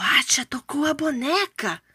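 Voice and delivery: whispering. A son speaks to his father as they watch a doll, whispered. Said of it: "sussurrou Nintikuma".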